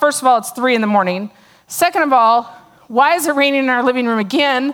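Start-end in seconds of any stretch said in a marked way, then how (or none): none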